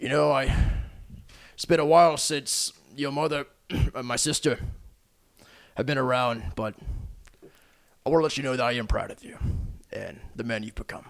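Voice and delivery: sighing character voice. Game master voices Uncle Turk speaking to his nephew: Turk, sighing as he speaks. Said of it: "Turk sighs and says".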